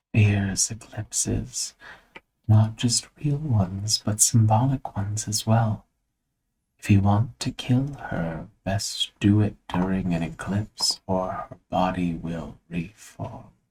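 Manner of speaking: hushed half-whisper in a beetle-like voice. A beetle flies past a listener's ear and speaks in a half-whispering beetle voice. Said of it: "And it whispers".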